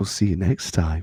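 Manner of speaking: very low, soft radio-style podcast voice. Asked to sign off the show, the speaker says goodbye in best podcast voice. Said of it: "in your best podcast voice".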